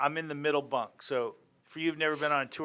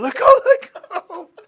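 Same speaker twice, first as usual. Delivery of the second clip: very loud, shrill, very high, stretched-out scream; 16 dB louder than usual. Retelling a story where someone tries to pull away: imitating someone screaming. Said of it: "he's screaming".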